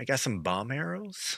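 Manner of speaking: very soft, slow, secretive hushed half-whisper. Voicing a merchant who leans in close to sell: half-whispering merchant. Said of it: "he's whispering even though he doesn't need to".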